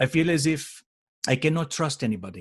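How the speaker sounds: put-on French Canadian accent. Retelling what a woman said to you, in her French Canadian accent. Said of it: "in her French Canadian accent".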